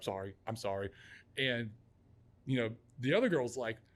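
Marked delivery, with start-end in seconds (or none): 0.0-0.9 put-on panicked tone, lower and quieter. Retelling how she apologized to him: imitating someone freaking out. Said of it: "freaking out".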